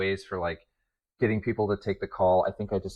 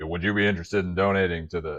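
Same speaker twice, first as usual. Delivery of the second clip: fake rough, gravelly voice; 3 dB louder than usual. Retelling a police-fund cold call, imitating the caller's gruff voice. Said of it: "he comes on with like a gruff voice".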